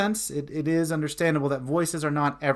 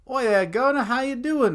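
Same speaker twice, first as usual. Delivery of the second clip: casual put-on British accent, pitched up; 9 semitones higher than usual. Trying out a greeting in a put-on British accent. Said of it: "if you try to do a British accent".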